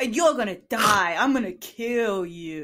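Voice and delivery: put-on baby cop character voice. Performing a stage bit on request: baby cop character voice. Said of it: "That's baby cop".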